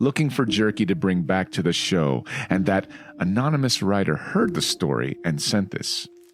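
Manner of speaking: ordinary delivery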